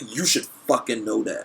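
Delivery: ordinary delivery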